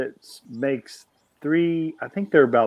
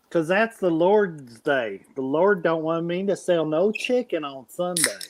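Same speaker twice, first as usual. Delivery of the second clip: put-on tipsy, drunk-sounding Southern accent; 4 semitones higher than usual. Joking around with two others, speaking in a fake drunk southern accent. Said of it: "Why do you sound like you're drunk?".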